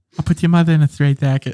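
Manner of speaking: put-on tough-guy voice with a lisp. Quoting a threat from a video: Mike Tyson impression with lisp. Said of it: "you stumped me with that impression".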